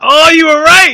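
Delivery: high, loud, excited exclamation.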